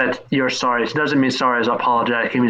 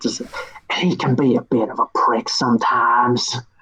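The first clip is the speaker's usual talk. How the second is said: stage whisper, loud. A character looks around and remarks on someone, in a loud whisper. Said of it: "he whispers loudly".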